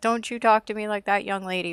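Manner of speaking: put-on yelling voice. Retelling how her father yells at her off screen: imitating a father yelling. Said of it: "her father is yelling at her".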